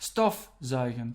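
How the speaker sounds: low, slow, STOF stressed in stofzuigen. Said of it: "so you put your, uh, stress on stof".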